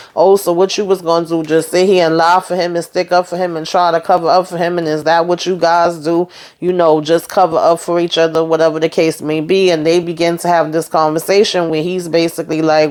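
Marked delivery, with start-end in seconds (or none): none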